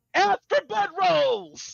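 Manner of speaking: very high, shrill, rough, raspy yell. Calling out in character to the party members going off: yelling out. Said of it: "And Leon yells out".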